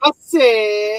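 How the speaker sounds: high, slow godfather character voice. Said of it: "say it in your Ninong voice".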